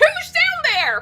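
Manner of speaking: very high, very loud, shrill yell. Reading a scene aloud, speaker tries a McGucket voice. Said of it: "This is gonna be a horrible impression of McGucket".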